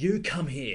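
cranky school teacher voice. Retelling how a stern man called someone out, in a cranky school teacher voice. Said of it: "sounded like a cranky school teacher".

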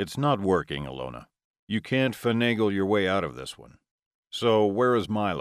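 ordinary delivery

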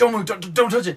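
very loud, shrill, very high-pitched yell. Retelling how Dad reacted when Mom moved it: imitating someone yelling. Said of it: "kinda yell-".

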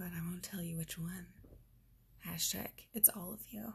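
soft, playful whisper.

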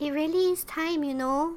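put-on high-pitched, childlike little-kid voice. Retelling what a woman said: childlike voice. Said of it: "she said in a childlike voice".

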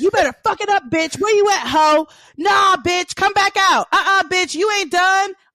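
hype-man screaming at the top of his lungs, loud, high. Retelling how a concert-goer behind them kept yelling: imitating a man screaming like a hype man. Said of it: "he would be screaming at the top of his".

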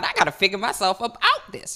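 ordinary delivery

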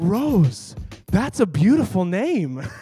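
put-on heartfelt, wholehearted, earnest delivery. Retelling quoting a movie line on meeting someone: saying it with all heart. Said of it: "I just say it with all of my heart".

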